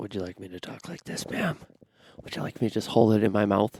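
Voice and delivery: very loud, mouth-on-the-mic ASMR voice. Joking after being told to get closer to the mic: joking ASMR-style voice. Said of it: "Some A S M R s-, stuff going on there".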